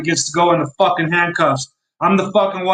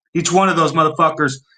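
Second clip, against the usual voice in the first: normal talking voice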